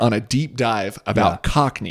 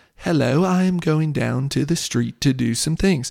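posh, upper-class, royal-style British accent; 2 semitones higher, 4 dB quieter than usual. Comparing accents, the speaker demonstrates the way royals speak: posh royal-style accent. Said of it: "the posh version that you hear the royals speak".

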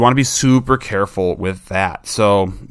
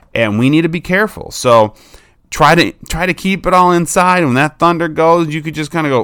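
normal talking voice

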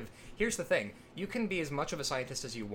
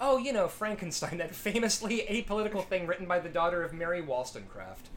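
usual speaking voice

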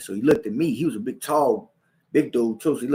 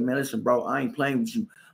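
ordinary talk

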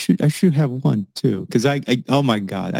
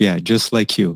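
ordinary talk

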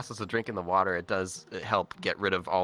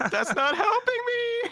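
very high, loud yell; 4 dB louder than usual. Retelling his reply to a reassurance from the person in the bed, retelling a yell. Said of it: "And I just yelled out loud".

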